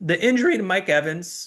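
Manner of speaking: choked-up crack, voice breaking up high. Discussing a player's injury, choked up, voice cracking. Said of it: "sorry about the voice crack".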